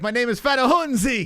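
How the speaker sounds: loud, shrill Italian accent, pitched way up. Joking about a Nigerian walking into a pizza parlor, in an Italian accent. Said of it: "You got to say it with an Italian accent now".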